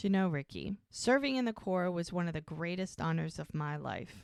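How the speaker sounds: ordinary talk, nothing marked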